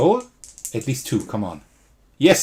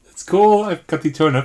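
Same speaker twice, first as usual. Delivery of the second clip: high-pitched shouting with pure excitement; 5 semitones higher, 4 dB louder than usual. Finding the turnip they were looking for in the game: excited shouting. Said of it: "Sorry for shouting, but I'm really excited right now".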